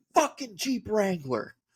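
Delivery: very high-pitched, enraged, furious yell. Retelling how a man tore open the room's curtains, imitating a furious shout. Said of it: "Like legitimately furious about the parking lot".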